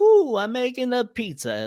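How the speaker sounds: cartoonish hero voice, high, big swooping pitch. Acting out a director asking for more Mario: Mario voice. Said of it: "I need you to be more Mario".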